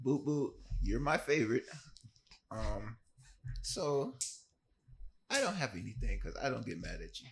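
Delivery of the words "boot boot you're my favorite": high, laid-on put-on grandma voice. Improvising a play on the spot based on an angry grandma: grandma accent. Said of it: "He did the grandma accent".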